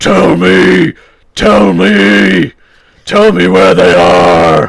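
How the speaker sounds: very loud, raw, gravelly bellow with "me" stretched out. Pitching an imagined lozenge advert, the speaker voices Batman interrogating a henchman: Batman voice. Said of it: "it's Batman".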